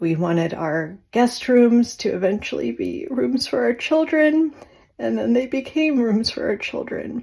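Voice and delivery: high voice, near tears, on the verge of crying. Remembering hoping and praying for the children, on the verge of tears. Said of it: "I'm gonna start crying right now".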